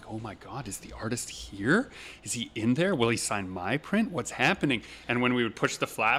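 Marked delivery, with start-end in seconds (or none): 0.1-4.8 acted, reverent, awestruck, starstruck gushing. Retelling how the crowd peeked in for the artist: imitating reverent fans. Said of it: "looking in with this reverence".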